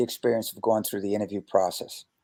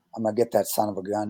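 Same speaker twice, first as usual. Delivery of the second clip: acted muttering under the breath; 3 dB quieter than usual. Retelling words said while shaking an opponent's hand: imitating muttering under breath. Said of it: "I said under my breath".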